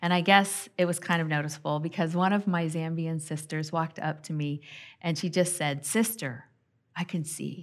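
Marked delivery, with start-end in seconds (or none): 5.8-7.6 kindly, caring tone, full of compassion. Retelling what a Zambian sister said: imitating a compassionate tone. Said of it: "She said it with such compassion".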